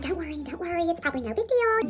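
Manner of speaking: high, soft, reassuring, friendly voice.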